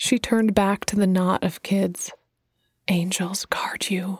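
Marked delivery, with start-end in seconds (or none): 2.9-4.2 soft whisper, quieter and slower. She turns back to the knot of kids; whispered. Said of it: "she whispered".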